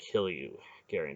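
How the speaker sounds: ordinary delivery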